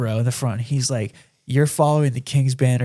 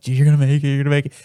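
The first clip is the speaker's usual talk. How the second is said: shaky, trembling, quivering voice; 4 dB louder than usual. Retelling talking to yourself while driving in your car: retelling a quivering voice. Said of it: "like quivering voice".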